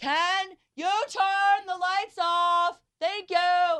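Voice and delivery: put-on very high, drawn-out shouting yell. Retelling asking her husband to turn off the lights: imitating her own yell. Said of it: "I yelled".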